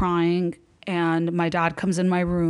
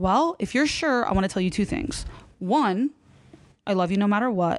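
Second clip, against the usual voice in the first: ordinary talk, nothing marked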